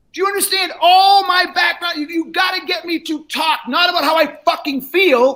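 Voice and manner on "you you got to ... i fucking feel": emphatic rant, hammering each point. Speaking to salespeople about asking buyers how they feel, yelling. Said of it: "And I'm yelling at you".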